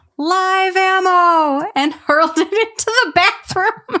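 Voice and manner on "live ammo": shouted, with the word "ammo" long and drawn out. Reading a comment aloud, quoting a dad hurling a pad: imitating a yell.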